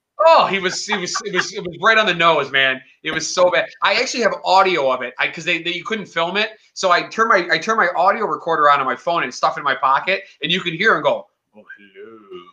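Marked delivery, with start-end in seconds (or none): 11.6-12.4 very deep, hushed, soft voice. Describing an audio recording, imitating Kirk's greeting: deep Kirk voice. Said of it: "so deep".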